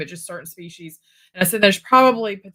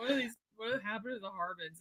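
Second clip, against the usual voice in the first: mock distressed voice, quieter; 3 semitones higher, 20 dB quieter than usual. Retelling how Troy reacted to a stolen lid: imitating Troy sounding distressed. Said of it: "he was so distressed".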